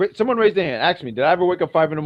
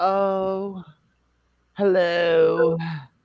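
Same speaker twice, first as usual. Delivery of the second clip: put-on British accent, drawn-out oh; 3 semitones higher, 3 dB quieter than usual. Retelling how Cora answered her ringing phone: British-accent impression of Cora. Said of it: "I made it sound British".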